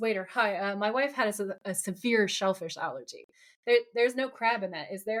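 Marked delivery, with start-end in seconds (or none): none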